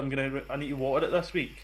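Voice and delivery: ordinary talk, nothing marked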